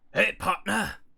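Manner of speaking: put-on gruff drawling voice. Calling out to a partner in a game, in a Drifter voice. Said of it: "Drifter voice ready".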